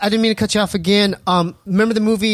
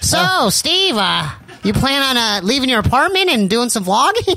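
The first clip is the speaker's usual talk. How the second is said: bad put-on voice, pitched higher; 4 semitones higher than usual.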